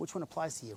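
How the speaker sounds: hushed, very quiet, low voice. Asking Adam a question from far away, in a low voice. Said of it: "I'm going to say it with a low voice".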